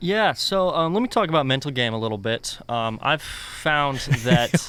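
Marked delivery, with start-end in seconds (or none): 3.0-4.6 speaking while giggling through the words. Starting to explain a view on mental game, giggling while talking. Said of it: "Why are you giggling".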